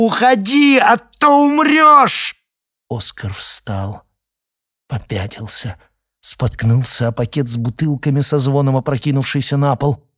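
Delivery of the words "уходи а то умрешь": very high, very slow, drawn-out yell. Reading fiction aloud, voicing a female character confronting a frightened companion, shouting. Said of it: "закричала".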